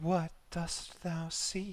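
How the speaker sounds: very high, very drawn-out, sultry feminine voice. Acting out a voice that rings throughout your head, sultry feminine voice. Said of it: "it's a feminine voice, and I will try and do this justice, but just so you know what I'm going for, it's it's very much a sultry voice".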